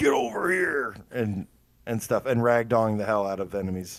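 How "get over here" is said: high-pitched, loud yelled call. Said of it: "we're all gonna be getting to yell".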